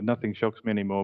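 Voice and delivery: ordinary delivery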